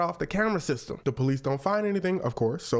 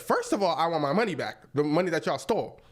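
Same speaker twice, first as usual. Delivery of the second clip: ordinary talk, nothing marked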